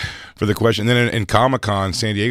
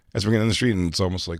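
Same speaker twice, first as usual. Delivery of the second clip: plain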